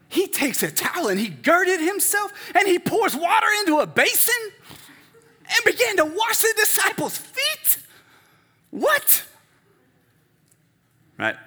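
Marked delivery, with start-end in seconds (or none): 0.1-9.2 bad, higher, louder impression of passionate sports analyst. Reading a scripture passage the way a sports analyst would: bad Stephen A. Smith impression. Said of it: "That's a bad impression".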